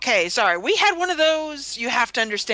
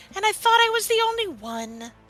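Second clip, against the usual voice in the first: sorrowful, sad, pitched-up little voice; 8 semitones higher than usual. Voicing a character who looks down at him: sad smiling pout. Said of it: "a sad, smiley pout".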